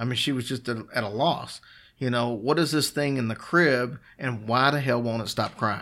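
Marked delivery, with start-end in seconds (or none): none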